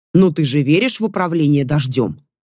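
plain reading voice

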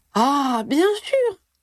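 bright, high, sudden exclaiming burst. Ginny finally answers Harry's question, exclaiming. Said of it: "s'exclama finalement Ginny".

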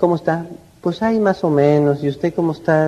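unenthusiastic, indifferent, dragged-out voice.

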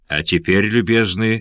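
ordinary delivery, nothing marked

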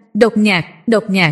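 ordinary delivery, nothing marked

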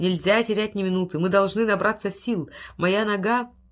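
ordinary talk

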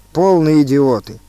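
ordinary delivery

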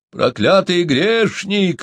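high, hollered outburst, yelled. Reading a story, Uncle Dokso yells at Chumboka in the pit, yelled. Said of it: "вопил дядюшка Доксо".

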